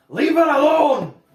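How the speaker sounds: very loud, high, threatening, intimidating shout. Voicing a character trying to intimidate a guard: intimidating shout. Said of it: "try and intimidate the same way Valentina does".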